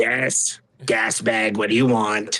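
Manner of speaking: low, slow, drawn-out goblin character voice. Voicing the second goblin answering his companion: goblin voice. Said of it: "you hear them conversating".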